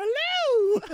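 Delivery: put-on very high, loud elderly British lady voice. Joking about newborns greeting the world: old British lady voice. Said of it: "Like an old, old British lady".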